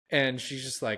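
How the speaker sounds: ordinary talk, nothing marked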